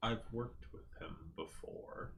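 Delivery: very quiet voice. A character leans in close to the party, speaking really quietly. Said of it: "she just says really quietly".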